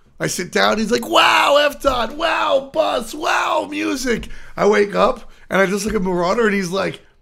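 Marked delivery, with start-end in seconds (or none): 1.1-4.3 put-on very high, starstruck kid cheering, drawn-out excited exclamations. Retelling how a young player acts at a tournament: imitating a happy, excited kid. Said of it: "He's just happy to be at lan".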